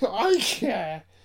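very high voice crack on care. Pressed on a podcast to say something private, voice cracking high. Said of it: "His voice just cracked so high".

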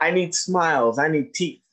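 normal talking voice

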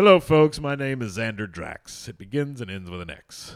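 grand, loud, belted-out delivery. Quoting a bad guy from the movie The Phantom: Xander Drax. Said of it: "Did you pull a quote from the fucking Phantom?".

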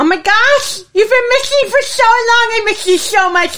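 overjoyed, high, gushing cry.

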